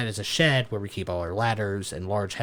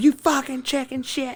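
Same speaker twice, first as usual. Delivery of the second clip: loud, shrill put-on scream, pitched very high; 6 dB louder than usual. Retelling how a coworker chased a taxi in a golf cart: imitating someone screaming.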